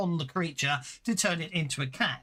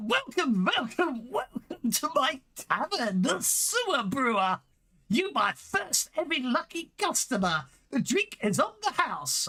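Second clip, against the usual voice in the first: high, put-on goblin voice; 8 semitones higher than usual. Narrating the scene, the speaker voices a goblin greeting a customer in goblin voice. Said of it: "the goblin goes".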